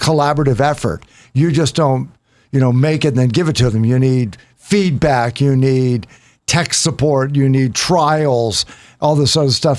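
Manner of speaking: ordinary talk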